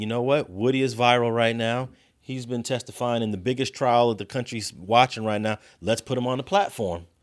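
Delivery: ordinary delivery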